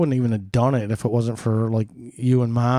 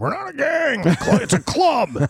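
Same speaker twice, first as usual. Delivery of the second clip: very high, swooping, offended, indignant yell; 14 semitones higher than usual. Retelling how the club members reacted at a benefit: imitating bikers screaming. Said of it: "all of them started screaming".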